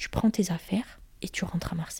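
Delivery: put-on very quiet, icy, dry, cold voice. Retelling what she told the man she was arguing with, a very dry, cold line. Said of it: "Très sèchement, très froidement".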